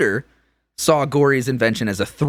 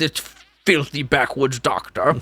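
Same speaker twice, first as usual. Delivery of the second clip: put-on voice with audible spit. A speaker shows the voice he uses for Tudor, in his Tudor character voice. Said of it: "That's my voice for him".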